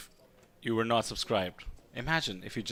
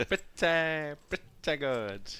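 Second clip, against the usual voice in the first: exaggerated put-on voice, mouth opened very wide; 4 semitones higher than usual. Showing the way Larry David says a phrase: Larry David impression, wide-mouthed. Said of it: "the way he opens his mouth so wide".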